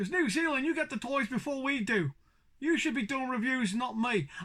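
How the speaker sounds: accidental slip into a put-on Cockney accent. Addressing viewers in a toy video, slipping into a Cockney accent. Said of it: "I don't know why I went Cockney there".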